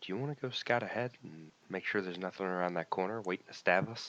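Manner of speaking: soft, very hushed half-whisper. Player asking a party member to scout ahead in an echoing hallway, hushed half-whisper. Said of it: "I'm being very hush hush right now".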